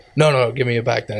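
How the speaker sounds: mock aggressive, pushy voice. Retelling sellers turning on someone who cannot pay: imitating an aggressive demand. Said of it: "a little bit aggressive".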